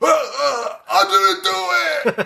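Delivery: put-on hammy scream, very high and very slow. Retelling an actor's overacted murder-accusation scene: imitating Lance screaming badly. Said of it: "he's screaming".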